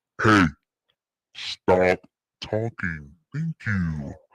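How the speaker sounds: very low, slow, deliberate deep voice. Telling the others to stop talking: deep voice. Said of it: "y'all made me use my deep voice".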